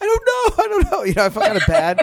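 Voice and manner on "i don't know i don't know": put-on very high, squeaky, flustered kid voice. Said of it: "he's like".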